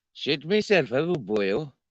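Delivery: put-on Welsh accent. Asked to show off different accents, now doing Welsh, Welsh accent.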